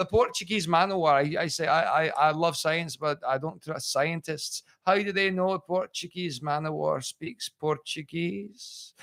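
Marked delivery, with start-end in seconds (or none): 1.7-8.9 put-on Scottish accent. Retelling an old joke from stage: put-on Scottish accent. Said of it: "I used to do it like that".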